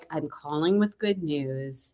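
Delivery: put-on elegant, calm voice. Acting out the phone call in which she gave you good news, imitating Sarah Nelson's elegant, calm voice. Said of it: "She was like".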